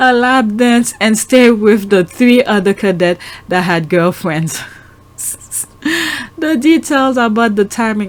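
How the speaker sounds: words broken up by laughter throughout. Recounting a promise made over the phone, laughing while talking. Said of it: "I'm sorry I'm laughing".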